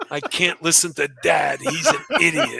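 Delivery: put-on muttering under breath. Imagining a player sitting on the bench, imitating muttering under breath. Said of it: "she's muttering under her breath".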